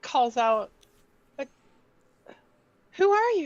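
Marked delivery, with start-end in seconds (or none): 1.4-3.5 little, small, high voice. Narrating a scene where Lily calls out to a warrior, in a little high hobbit voice. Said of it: "in her little high hobbit voice".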